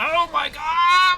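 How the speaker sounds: shocked, high, slow, loud shriek.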